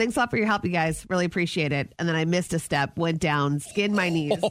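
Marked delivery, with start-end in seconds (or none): 0.0-1.9 put-on, laid-on-thick sarcasm, rushed. Speaker retelling what she said while carrying Christmas decorations, retelling own sarcastic remark. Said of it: "so super sarcastic".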